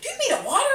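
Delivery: very high, frantic, fussing woman's voice. Retelling how she asked if water was needed: imitating a frantic woman. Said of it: "she's, like, frantic".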